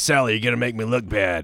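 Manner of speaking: put-on voice with a Texan accent. Recalling a chain-smoking boss from Texas who scolded salespeople, imitating Ron. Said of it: "that was his voice".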